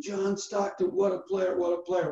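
play-acted cheering, restrained, screaming. Retelling a courtside moment, imitating his own past screaming. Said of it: "you can hear my voice screaming".

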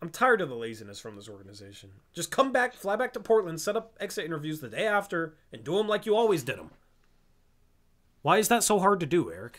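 irritated, fed-up voice. Complaining about the organization skipping usual exit interviews, getting annoyed. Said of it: "I'm getting annoyed".

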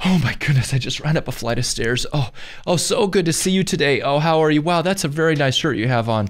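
mock sweet gushing, high, laid on thick. Retelling how you talked your way onto a plane, retelling laying it on thick. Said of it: "I laid it on thick".

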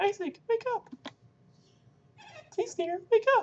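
terrible, very high, loud put-on character voice. Voicing a game character as the game begins, in bad voice acting. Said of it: "my voice acting completely terrible".

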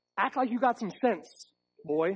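condescending, talking-down fatherly tone. Recalling what a parent always told him: imitating his dad. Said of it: "I can hear my dad".

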